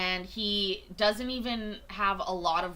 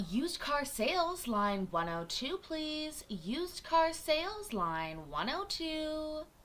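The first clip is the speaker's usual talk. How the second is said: slow, high loudspeaker paging voice, "two" drawn out; 7 semitones higher, 5 dB quieter than usual. Redoing an old job's pa page for used car sales: pa paging voice. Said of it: "in the middle of my paging voice".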